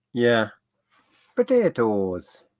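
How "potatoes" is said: bad, terrible, put-on Irish accent. Repeating a quiz answer in a terrible Irish accent. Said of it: "that was a terrible Irish accent".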